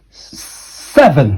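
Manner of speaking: seven with rising stress on first syllable sev. Pronunciation drill on numbers, seesaw pattern: rising stress on first syllable of seven. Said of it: "like a seesaw again, going up in the first syllable".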